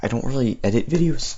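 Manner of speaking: voice breaking, cracking on a word. Talking to viewers of the video while waiting, voice cracking. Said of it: "Oop, voice crack".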